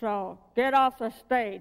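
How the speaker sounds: big resounding voice. Acting out a voice from the darkness ordering the new girl off the stage, booming voice. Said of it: "this booming voice that comes from the darkness".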